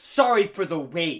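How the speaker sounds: play-acted, loud, drawn-out voice dripping with snippy attitude. Retelling what drive-thru employees said at the window: imitating an attitude-filled apology. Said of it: "with an attitude".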